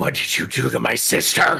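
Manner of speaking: furious, raging witch voice, rough, creaky rasp. Voicing the hag confronting the party: hag voice with pure rage. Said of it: "pure rage behind her voice".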